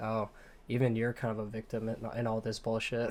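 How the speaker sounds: ordinary delivery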